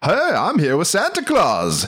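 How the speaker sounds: vintage news announcer voice. Describing a newscaster's live remote with Santa Claus at the North Pole: old-timey newscaster voice. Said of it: "doing the old timey newscaster speak".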